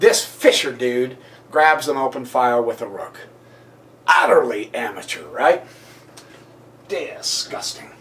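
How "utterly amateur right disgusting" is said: sarcastic, ironic, feigned disgust. Praising a grandmaster's move while pretending to scorn it: sarcastic. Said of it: "I'm being sarcastic".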